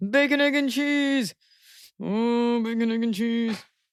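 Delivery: slow, drawn-out, affectionate cooing voice. Showing how to talk to a dog while squeezing her face: cooing at a dog. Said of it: "cup your dog's face and squeeze it and say".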